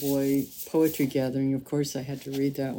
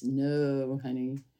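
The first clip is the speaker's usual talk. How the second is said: "no" stretched out long; 3 dB quieter than usual. Retelling what Audre Lorde said when asked about figuring life out: Audre Lorde voice. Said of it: "saying in her very Audre Lorde voice".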